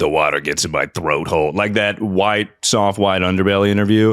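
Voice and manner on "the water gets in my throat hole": put-on old smoker woman voice, lower. Showing the only impression they can do: old smoker lady at a diner. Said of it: "old smoker lady that works at a diner".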